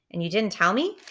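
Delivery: ordinary delivery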